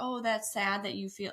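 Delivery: ordinary talk, nothing marked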